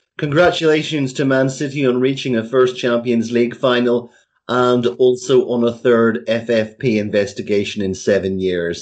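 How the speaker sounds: usual speaking voice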